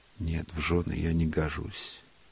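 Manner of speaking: usual speaking voice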